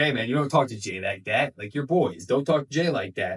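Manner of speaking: imitated angry voice. Retelling a wrestling segment, imitating someone angry. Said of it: "at this point, Sami's pissed".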